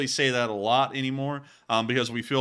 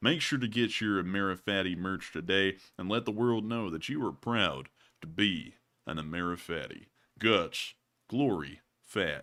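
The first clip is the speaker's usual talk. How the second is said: put-on deep cowboy drawl, lower and quieter; 4 semitones lower, 4 dB quieter than usual. Doing a merch ad read in a Sam Elliott voice. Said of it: "Do it in a Sam Elliott!".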